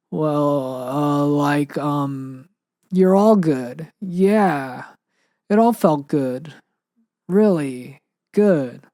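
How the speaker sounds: drowsy, dazed, hesitant, faltering, very drawn out. Reading a story, answering who kisses best: hesitant, dazed half-asleep voice. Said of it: "said hesitantly in a dazed voice".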